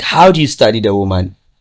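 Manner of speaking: usual speaking voice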